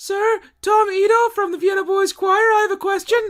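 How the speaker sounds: very high, strained, pinched choirboy voice. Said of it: "It sounded like he had his underwear in his ass".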